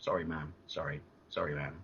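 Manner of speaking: mock soft, meek, polite, dutiful tone. Retelling apologizing to an angry mum: imitating own polite son voice. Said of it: "I just regressed to being, like, polite, you know, son boy".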